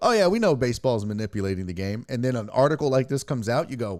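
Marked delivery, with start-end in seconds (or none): none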